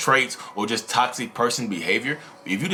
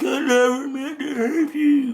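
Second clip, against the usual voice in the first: high-pitched fake sobbing, boo-hoo style. Imitating a caught cheater crying and apologizing: imitating fake crying. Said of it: "Why are you crying?".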